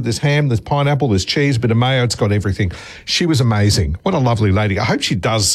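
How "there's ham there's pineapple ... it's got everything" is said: ordinary talk, nothing marked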